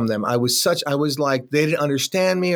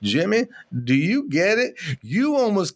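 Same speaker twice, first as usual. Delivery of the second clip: imitated southern drawl; 4 semitones higher than usual. Retelling the sponsor's reply after hearing the whole story, imitating Brent's Southern drawl. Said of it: "My sponsor has a Southern draw".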